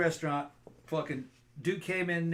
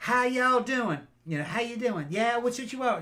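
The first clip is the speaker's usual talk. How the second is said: heavy Southern drawl, laid on strong, pitched up; 6 semitones higher than usual. Retelling how a young restaurant worker greeted customers, imitating a strong southern drawl. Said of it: "just like strong drawl".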